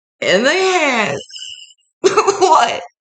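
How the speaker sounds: words pushed out high through tears of laughter.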